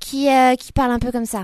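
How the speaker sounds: put-on young ingénue voice, high and bright.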